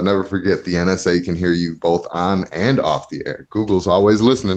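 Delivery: ordinary delivery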